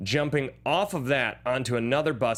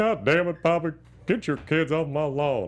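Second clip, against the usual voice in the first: put-on Texan drawl, slower; 3 semitones higher than usual. Talking about a show, the speaker does the one impression they're good at: Hank Hill impression. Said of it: "that's the only impression I'm good at".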